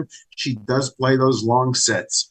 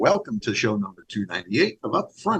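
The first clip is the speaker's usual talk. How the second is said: soft, fake radio announcer voice; 4 semitones lower, 5 dB quieter than usual. Opening a radio show episode in a fake radio voice. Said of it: "I'll even use a little bit of a fake radio voice today".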